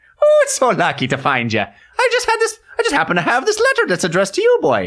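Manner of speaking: fake Irish leprechaun voice. Riffing in a conversation about luck, put-on stage irish accent. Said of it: "I'm just going to let you do this".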